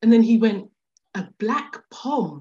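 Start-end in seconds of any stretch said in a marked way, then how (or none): 1.1-2.4 shocked, taken-aback, caught-off-guard blurted remark. Retelling what a staring stranger said on hearing an english accent: imitating a shocked man. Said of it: "he was kind of, like, shocked".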